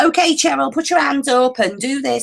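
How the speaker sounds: put-on Liverpool accent. Speaker quotes a friend who has a liverpool accent; imitating a liverpool accent. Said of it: "she's got a Liverpool accent".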